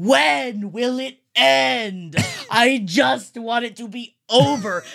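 scream dragged out, end stretched. Recalling watching a movie with friends in an empty theater, retelling their screaming. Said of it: "we're just screaming like".

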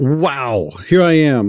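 very slow, terrible drawl, each word dragged out. Answering a welcome to the show: unintended terrible Christopher Walken voice. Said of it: "I did not intend to do a terrible Christopher Walken just then".

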